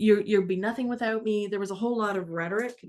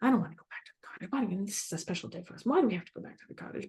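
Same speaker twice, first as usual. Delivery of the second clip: huffy, breathy, put-out, indignant tone; 5 dB quieter than usual. Retelling what Mom said to Dad: imitating a huffy mother. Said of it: "she's all huffy".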